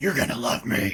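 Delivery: deep, breathy, put-on vigilante hero voice. Doing a test run of a voice they are practising, a little deep. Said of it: "It's not as raspy as I wanted".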